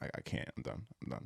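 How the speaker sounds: choking up, breathy, barely whispered. Retelling a coach walking out of an interview: imitating someone choking up. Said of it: "he's choking up".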